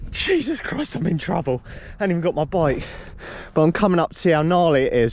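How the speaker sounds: winded, puffing, panting, out-of-breath words. Speaker just ran up a hill to scope out a course, panting. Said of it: "I am panting".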